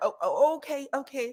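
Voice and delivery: acted nervous voice, high-pitched and slow. Describing a man getting nervous for Tisha, imitating Carlos getting nervous. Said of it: "You could see him get nervous".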